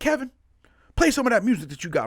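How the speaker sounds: southern twang, pitched very high. Retelling what a network representative said at a booth: imitating his Southern accent. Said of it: "I'm trying to use his accent".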